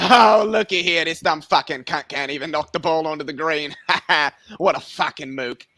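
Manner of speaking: comic, crude put-on Australian accent. Imagining golf commentary by an Australian announcer: mock Australian accent. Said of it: "think an Australian would just be hilarious".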